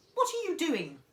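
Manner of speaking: piercing, shrill, loud call, sounding distant. From the next room, Grandma calls out to George, in a shrill voice. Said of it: "came the shrill voice from the next room".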